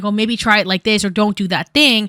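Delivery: ordinary talk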